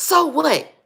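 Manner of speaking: forceful, aggressive, very high-pitched delivery. Retelling what a preacher father taught, imitating aggressive father. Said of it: "I'm saying it like this is because my daddy was a very aggressive man".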